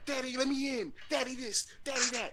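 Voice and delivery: put-on high, whiny, pestering child voice.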